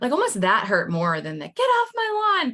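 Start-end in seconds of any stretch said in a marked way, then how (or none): 1.5-2.5 mock stretched-out, drawn-out shout, pitched way up. Retelling homeowners who turned away a door-to-door seller: imitating someone yelling. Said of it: "people yelling at me".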